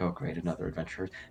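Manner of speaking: muttering under breath. Voicing the wizard as an adventurer walks in, muttered under his breath. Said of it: "You hear him like under his breath".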